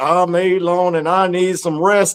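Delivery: slow, put-on elderly man's voice. Retelling how Jacques took the speaker's words and said them in an old man voice. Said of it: "he put an old man voice and said".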